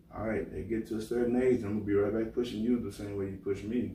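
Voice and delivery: normal talking voice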